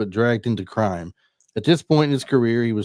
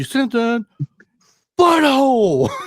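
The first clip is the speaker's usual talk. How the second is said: very high, pitched-up delivery; 12 semitones higher, 4 dB louder than usual. Recalling a scene where Nicolas Cage talks to Sean Connery: imitating Nicolas Cage. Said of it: "it's just him all over".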